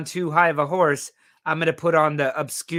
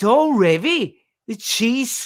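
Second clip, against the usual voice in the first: clumsy put-on Liverpool Scouse accent, slow, high; 7 semitones higher, 4 dB louder than usual. Reading out a chat message, attempting a scouse accent. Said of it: "I'll have to say it in a Scouser accent".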